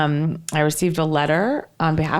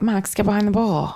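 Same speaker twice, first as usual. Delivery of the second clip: normal talking voice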